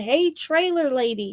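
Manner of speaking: light calling out, like put-on screaming. Retelling how Danielle called a lady to the booth: imitating someone screaming. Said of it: "by screaming".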